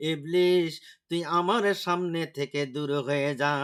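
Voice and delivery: ordinary talk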